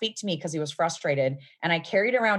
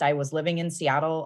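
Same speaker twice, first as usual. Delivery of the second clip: normal talking voice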